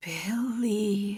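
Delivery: slow, strained tone. Narrator says billy's name after seeing the cut on his head, slow strained tone. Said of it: "I said in a slow, strained tone".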